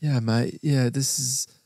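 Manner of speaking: casual, relaxed fake English accent. Friends tease each other about doing an english accent: put-on english accent. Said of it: "do anything but an English accent".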